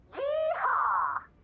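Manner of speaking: high, loud exuberant whoop.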